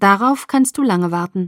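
plain

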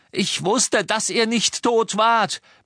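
shrill, very high roaring bellow. Ron, arguing with her, drowns out her voice for the first time, bellowing. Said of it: "brüllte Ron".

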